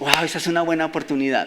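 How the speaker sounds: plain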